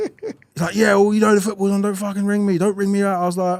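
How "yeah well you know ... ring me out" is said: irate, angry rant, rattled off fast. Retelling a phone call where his uncle swore at him, imitating angry uncle Winston. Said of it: "calm down".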